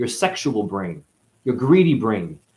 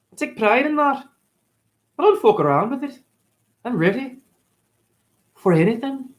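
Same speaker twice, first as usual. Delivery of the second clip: put-on Scottish accent, pushed very high; 13 semitones higher than usual. Thanking someone for a compliment on the accent: put-on scottish accent. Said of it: "thank you for my Scottish accent".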